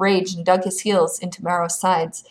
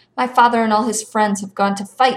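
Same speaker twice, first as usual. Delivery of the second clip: ordinary delivery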